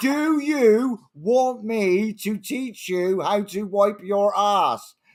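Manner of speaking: British parade-ground sergeant major voice. Repeating what they told one of their commanders: British sergeant major voice. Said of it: "in my best Sar- British Sergeant Major's voice".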